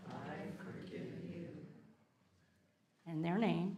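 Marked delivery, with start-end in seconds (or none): 0.1-1.5 barely audible, very quiet, soft half-whisper. Leading a forgiveness prayer aloud with listeners: half-whispering. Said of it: "Let's whisper".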